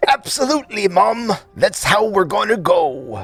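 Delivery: wrestler voice with a put-on British accent. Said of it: "Randy Savage doing the voice of Archibald with a British accent".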